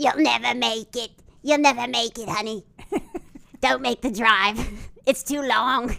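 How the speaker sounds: put-on woman's voice with New Jersey accent. Retelling what a lady said in a story, imitating the lady. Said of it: "that is how she sounded".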